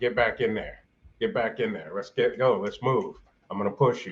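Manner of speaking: ordinary talk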